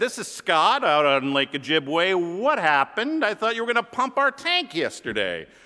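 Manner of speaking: put-on exasperated, annoyed voice in a New York accent. Calling back the man who was to pump the tank, put-on what-the-heck new york voice. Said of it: "in my best New York, what the heck are you doing voice".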